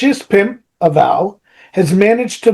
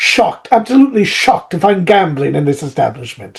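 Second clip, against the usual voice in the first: put-on classic old-film style British accent; 3 semitones lower than usual. After saying the word shocked, speaker jumps into a Casablanca British accent. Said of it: "jumped into Casablanca".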